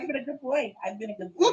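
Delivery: wheedling, coaxing put-on dog's voice. Giving the dog a voice as it waits for treats: voicing the dog. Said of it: "He's like".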